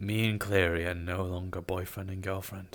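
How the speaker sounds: dead-sincere, very earnest delivery. Retelling how Asmo broke the news: imitating Asmo's very sincere voice. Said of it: "in a very sincere voice and said".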